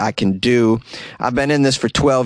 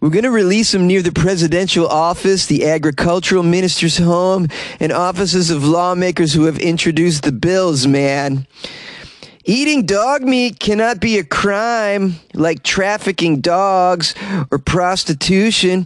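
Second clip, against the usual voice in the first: put-on stoner voice, pitched higher; 7 semitones higher than usual. Reading a quote from the dog meat farmers' head: imitating Zhu Young Bong as a stoner. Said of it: "who probably talks like a stoner".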